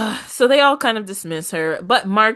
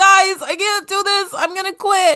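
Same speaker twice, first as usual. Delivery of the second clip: very high, tearful crying voice; 13 semitones higher, 3 dB louder than usual. Retelling a cast member quitting while crying: imitating someone crying. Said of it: "she cries more".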